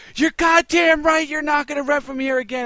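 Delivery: loud, shrill, high-pitched, full-throated yell. Speaker retells what he shouted out the store window at a leaving customer: retelling a shout. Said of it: "as I'm shouting out the window".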